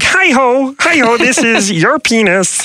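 put-on puppet frog voice. Reading out viewer answers on who it would sound like: Kermit the Frog voice. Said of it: "Kermit the Frog".

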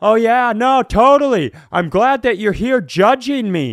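mock very loud talking. Retelling a grocery store confrontation with a stranger: imitating talking really loudly. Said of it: "I just started talking really, really loudly".

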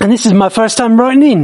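put-on New Zealand accent. Reading out a listener email, as Harrison in a Kiwi accent. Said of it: "got to do the Kiwi voice".

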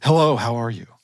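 put-on, seductive, sexy woman voice. Playing a scammer pretending to be a woman, greeting the recipient, put-on sexy woman voice. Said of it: "I have to put on my sexy voice".

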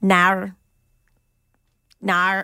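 Australian accent, "no" pronounced "nar" with r ending. Asked to hear the accent, the speaker says no in an Australian accent. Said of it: "an Australian person saying no".

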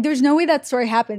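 ordinary delivery

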